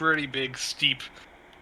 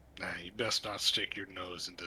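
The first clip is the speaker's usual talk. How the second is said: put-on deep slurred mutter, much quieter; 5 semitones lower, 9 dB quieter than usual. Speaker voicing the closest figure, who warns the listener, in a deep slurred mutter. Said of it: "mutters in a deep, uh, kind of a slurred voice".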